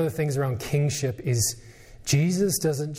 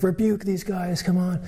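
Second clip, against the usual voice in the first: mock heckling yell, tossed up high; 5 semitones higher than usual. Retelling a Bible scene, voicing the Pharisees' rebuke, retelling a yell. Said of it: "yelling at him".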